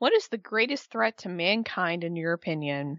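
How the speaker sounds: ordinary talk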